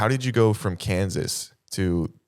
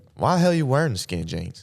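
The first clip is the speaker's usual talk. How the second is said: put-on trashy Southern accent; 6 semitones higher than usual. Improvising a scene, the speaker plays a bully from the other person's Southern hometown. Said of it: "Do you mind if I pretend to be".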